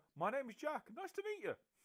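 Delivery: very high, very loud shout projected upward. Introducing yourself in character to someone high above: shouting up in character. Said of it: "I'd just kind of shout up and go".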